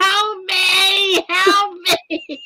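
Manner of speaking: very slow, high screaming, with me stretched long. Retelling a story where he's screaming to take the bags: imitating someone screaming. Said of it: "he's still screaming".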